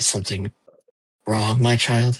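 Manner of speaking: sluggish, worn-out, very, very tired voice. Voicing a character answering from down the hall, in a very tired voice. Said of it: "you hear a very, very tired voice".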